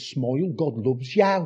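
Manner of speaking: put-on Brummie Birmingham accent. Recalling turning up at university in a sticker-covered duffel coat, in a Birmingham accent. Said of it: "in my lovely Birmingham accent said".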